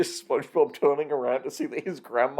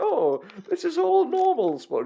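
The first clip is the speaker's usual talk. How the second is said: put-on grandma voice, higher. Joking about the episode, voicing the grandma: SpongeBob's grandma voice. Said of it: "SpongeBob's grandma being like".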